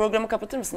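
words muffled, talking with mouth full. Asking someone to close the program while talking with mouth full. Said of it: "Ağzım dolu".

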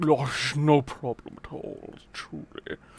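put-on upper-class voice. Voicing a character who answers another character's thanks, in a posh voice. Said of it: "I just did the fucking posh-ass voice".

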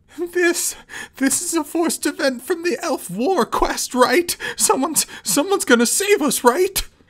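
tremulous, quavering, trembling high falsetto. Right after a scream, a man asks his companions, in a tremulous falsetto. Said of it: "said in a tremulous falsetto".

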